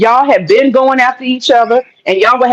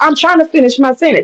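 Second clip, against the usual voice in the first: insistent, protesting tone; 3 semitones higher than usual. Giving an example of someone trying to finish a sentence: imitating Vaughn being interrupted. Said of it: "And she was like".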